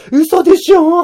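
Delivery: high, loud, slow drawn-out wail while crying.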